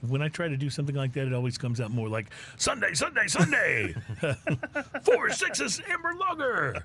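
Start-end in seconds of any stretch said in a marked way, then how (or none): 2.6-6.8 swooping, drawn-out, very high monster truck announcer voice. Trying to do that voice, it comes out as a monster truck announcer voice. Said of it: "very monster truck of you".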